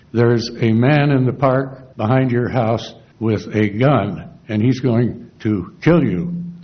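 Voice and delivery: ordinary talk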